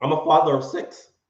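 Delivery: voice cracking and breaking. A father of six talks about keeping emergency savings; voice cracking. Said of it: "My voice cracked".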